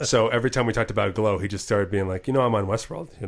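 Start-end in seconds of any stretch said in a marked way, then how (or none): 2.3-3.3 put-on deadpan delivery. Retelling how he kept talking about Westworld: Tommy's mock deadpan. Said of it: "In a total deadpan".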